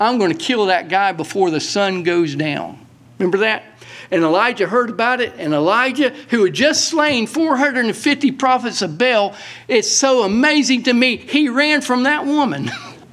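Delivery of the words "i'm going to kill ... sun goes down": plain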